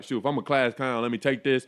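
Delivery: ordinary delivery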